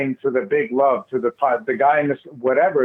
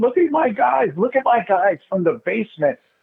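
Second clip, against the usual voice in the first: put-on high, tearful, proud voice; 8 semitones higher than usual. Imagining him looking down and weeping to his friends, acting out tearful words. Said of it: "He's crying to his friends".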